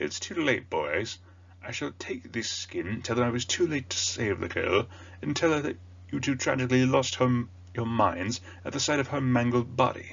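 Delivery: pompous, puffed-up, high-pitched voice. Voicing the teacher Gilderoy Lockhart as you pictured him, pompous Gilderoy Lockhart voice. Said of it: "I kind of pictured him with this like very pompous voice".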